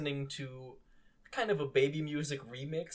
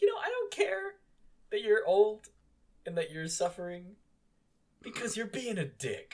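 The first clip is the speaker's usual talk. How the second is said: loud, high, mad, heated angry outburst; 6 semitones higher, 5 dB louder than usual. Retelling what was said to Grandma while watching: retelling own angry words. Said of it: "I got real mad at Grandma".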